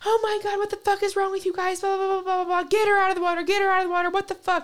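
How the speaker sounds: shrill, very high screaming. Telling a story, quoting the sister who yelled at the group, retelling a woman's screaming. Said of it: "she starts screaming".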